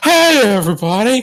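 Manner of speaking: very high-pitched, loud calling voice. Doing an impression of Brian turning into Harry Caray. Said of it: "when Brian turns into Harry Carey".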